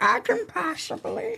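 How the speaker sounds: put-on high, soft baby voice.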